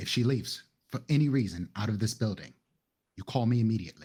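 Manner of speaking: hushed whisper. In a scene, a character gives another instructions, whispering. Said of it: "I'm whispering".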